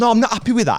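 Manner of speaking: very high, furious, fuming voice. Retelling what a fuming man said on coming back: imitating a fuming man. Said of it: "he's absolutely fuming".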